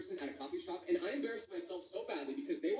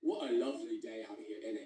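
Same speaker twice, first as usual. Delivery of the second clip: put-on very low-pitched voice with British English accent; 8 semitones lower than usual. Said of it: "them to have an accent".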